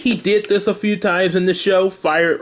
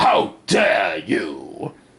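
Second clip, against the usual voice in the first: put-on villain robot voice, lower pitch; 10 semitones lower than usual. Showing how the original character sounded: original Megatron voice. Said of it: "instead of making him sound like this, like the original Megatron".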